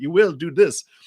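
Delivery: very high, loud, stern, regimented put-on German accent. Imagining regimented instructions being given, in a put-on German accent. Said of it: "it's like this German uh, accent".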